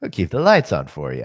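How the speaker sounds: eerie, creepy, very deep, very low put-on voice. Host saying a line for someone listening, creepy voice. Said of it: "that was a creepy voice that you did".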